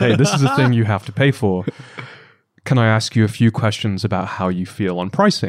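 play-acted serious, stern, no-nonsense tone. Retelling what he said to customers in onboardings: imitating his stern tone. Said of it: "very sternly look them in the eye and say".

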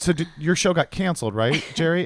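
innocent, clueless tone. Retelling a famous clip of Larry King asking Seinfeld: Larry King asking as if clueless. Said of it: "he's asking it like he really doesn't know".

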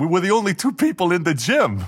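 loud, swooping Bronx brogue with Italian tinge. Retelling what a woman said in the gym: Connie Selica's Bronx brogue. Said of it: "that Bronx brogue that she has".

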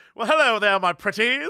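charming, romantic leading-man voice. Retelling what a man on a train said: imitating a Hugh Grant-like man. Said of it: "basically Hugh Grant from every Hugh Grant movie".

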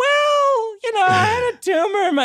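squeaky, very high voice with "well" stretched long. Retelling answering a woman on the phone, own voice going very high. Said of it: "My voice went so high".

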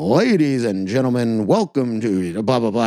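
boxing ring announcer voice. Recalling the moment a fighter was announced at a packed event, Bruce Buffer announcer voice. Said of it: "his boxing announcement voice".

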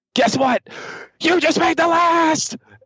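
hammy, over-the-top delivery pitched very high. Retelling how a catchphrase got hammed up: hammed-up Chris Jericho impression. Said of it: "he totally starts hamming it up".

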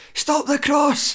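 put-on very high, urgent cry. Retelling shouts from the dugout during the build-up: imitating someone screaming. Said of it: "screaming at Josh Mullin in the build-up".

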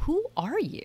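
very high, put-on marveling, wondering tone. Showing how she and her husband ask each other, in wonder. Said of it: "we say it in a, almost in a wonder. Like".

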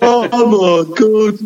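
put-on Birmingham (Brummie) accent, very high pitch. Acting out a man on the ground talking to himself, in an attempted Brummy accent. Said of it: "in such a clearly Brummy accent say to himself".

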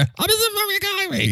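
self-important, announcer-like delivery, very high pitch. Imitating how Mister Coffee says his own name: Mister Coffee's self-announcing voice. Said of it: "the way he does that thing".

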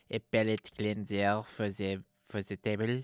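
fake French bistro waiter accent, soft and hushed. Imitating staff at a fancy French bistro bringing out a dish, in a French accent. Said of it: "That was French".

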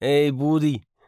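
put-on Dublin accent. Retelling a stranger greeting him while smoking out back: imitating a Dublin accent. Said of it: "he had a Dublin accent".

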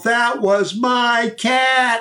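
put-on very high, slow, drawn-out yell. Retelling how an audience member stood up mid-talk: imitating a woman yelling. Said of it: "stood up in the middle of the audience and yelled".

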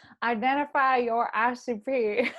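put-on country accent. Put on the spot by the host, who asked for her country accent. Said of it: "they literally have asked to hear your country accent".

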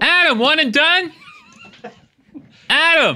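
very high yell, swooping in pitch. Calling out to Adam while a mic is being set up, shouting. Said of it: "You're shouting in my ear".

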